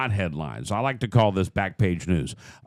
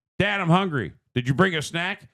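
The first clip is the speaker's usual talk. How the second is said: put-on child voice, higher pitch; 8 semitones higher than usual. Acting out how a trip really goes: acting out a child asking dad. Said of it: "let me say the way it really goes down".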